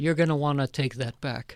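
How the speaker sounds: hard, tough-guy tone. Reenacting standing up to a man screaming on a train: tough-guy line. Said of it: "I'm reenacting now what I".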